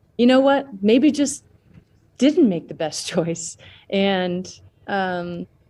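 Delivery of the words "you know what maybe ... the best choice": pitched-up voice, talking through a light chuckle. Answering in a debate about abortion, chuckling while talking. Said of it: "and with a chuckle".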